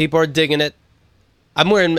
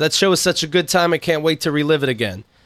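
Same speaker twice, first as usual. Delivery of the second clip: ordinary delivery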